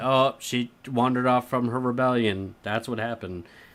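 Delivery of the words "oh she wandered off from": ordinary delivery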